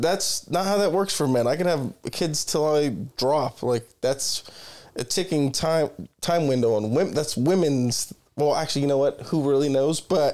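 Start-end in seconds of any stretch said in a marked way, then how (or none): none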